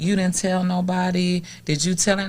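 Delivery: ordinary talk, nothing marked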